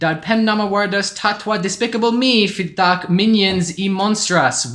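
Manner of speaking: cartoon-creature nonsense language. Opening a review in made-up Minion language: speaking Minionese. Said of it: "translated roughly from Minionish".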